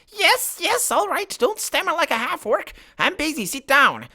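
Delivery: squeaking, very high-pitched creature voice. The creature at its orb breaks the silence before you announce yourself; squeaky voice. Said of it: "broken by a squeaky voice".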